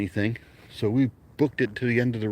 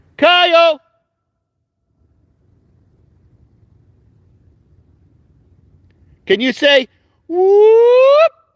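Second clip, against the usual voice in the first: shouting, higher and louder; 15 dB louder than usual. Calling out to someone far away outdoors: yelling out loud. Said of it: "So I'm gonna yell".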